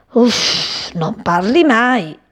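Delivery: slow, grumbling mutter under the breath. Cipì hops close to the silent cat, grumbling. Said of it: "e brontolò".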